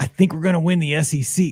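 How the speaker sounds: ordinary talk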